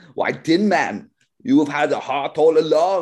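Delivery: put-on loud, high Austrian-accented action-hero voice. Acting out a reading for the role of Dorothy: Arnie voice. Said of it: "Arnie reading for the role of Dorothy".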